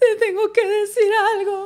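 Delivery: very high voice, weeping through sobs. Re-enacting her past self answering him in spanish, retelling her sobbing. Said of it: "I'm like literally sobbing".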